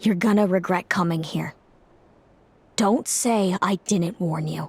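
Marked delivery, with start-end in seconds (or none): none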